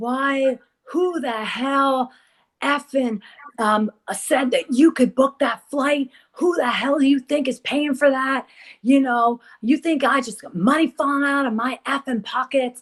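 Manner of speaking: furious, angry yelling tirade. Telling how a manager yelled at his artist on the phone, retelling angry yelling. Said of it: "He's like yelling at this artist".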